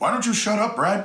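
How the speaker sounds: high, uppity, snooty tone. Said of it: "somebody who's all uppity going".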